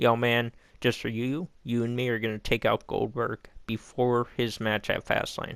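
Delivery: normal talking voice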